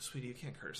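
very soft, quiet, hushed shushing. Retelling how the host told them not to curse: imitating Caitlyn like a librarian shushing. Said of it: "like a librarian telling you to be quiet".

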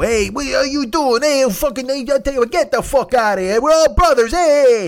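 shrill, loud, high ranting mobster voice. Describing mob movie types, imitating a psychopath mobster like Crazy Joe. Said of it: "the fucking psychopaths like Crazy Joe".

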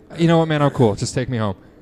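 loud, fed-up, exasperated delivery.

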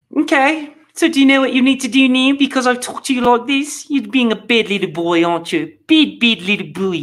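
put-on convincing New Zealand accent. Performing a quoted talking-to for the audience, in a new zealand accent. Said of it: "That is a great New Zealand accent".

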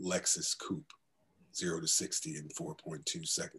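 deep baritone announcer voice. A voice actor demonstrates a commercial voiceover read, in a deep baritone. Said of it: "I'll do like a deep baritone".

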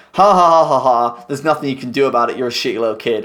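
mock gloating villain voice. Retelling how a bad step parent talks when a kid confronts them: imitating a gloating villain. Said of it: "drop the facade and are just like".

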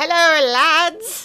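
loud, terrible Irish accent, like a granny. Host tries an Irish greeting after saying they can't do it: bad Irish granny accent. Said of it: "No, it's like a granny".

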